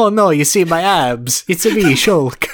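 put-on Italian accent. Imagining a game character's reaction, the speaker does Shulk with an Italian accent. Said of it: "what is this accent I'm doing?".

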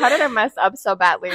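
ordinary talk

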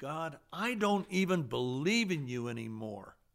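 mock furious, deliberate, drawn-out angry outburst. Retelling looking up toward heaven at a stoplight: retelling an angry outburst. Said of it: "I was so angry at God".

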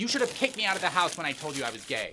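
furious, accusing, high-pitched yell. In a scripted argument, a grown child refuses to calm down for their mother, angry yelling. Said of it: "I will not stop yelling".

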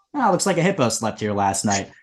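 ordinary talk

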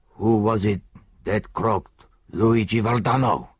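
hoarse, rough, rasped voice. A narrator reads a big italian man's question, asked hoarsely. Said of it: "Roared the big Italian, ... asked the Italian hoarsely".

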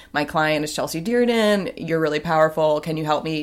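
ordinary delivery

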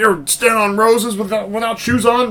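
shrill, high-pitched yell. Retelling a movie scene where a character yells at her: imitating someone yelling. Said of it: "yelling at her".

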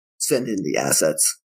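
very low, quiet muttering. Game narrator voices a man touching his earpiece, muttering into comms. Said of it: "you can hear him kind of mutter into the comms".

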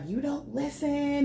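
acted, high-pitched yelling. Describing a man's mom pulling up and scolding him, imitating a mom yelling. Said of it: "she's yelling at him like".

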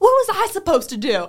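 high, loud, slow exasperated tone.

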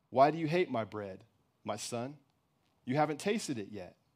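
calm, plain, patient, soft, unirritated. A mother answers her son, who says he hates her bread, simple, without irritation. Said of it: "For I am the bread maker, / answered the mother, / said the mother. / she answered simply, without irritation".

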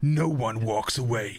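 deep movie-trailer narrator voice. Reading a movie tagline in a real-or-fake guessing game, movie trailer voice. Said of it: "Am I doing the voice right?".

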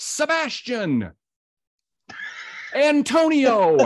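forceful, high, emphatic shout. Retelling someone leaping onstage on his cue: imitating an emphatic shout. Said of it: "he very emphatically, ... he shouts".

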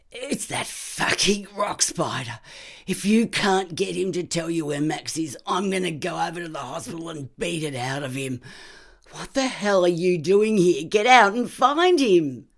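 raw, gravelled, very loud booming roar. Calling from the hallway to someone inside, in a booming, gravelly voice. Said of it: "a voice boomed, gravelled, rubbed raw".

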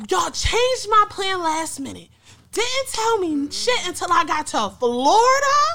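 play-acted pissed-off rant, very high-pitched and loud. Telling a story about a plan changed at the last minute, retelling an angry rant. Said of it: "I'm pissed".

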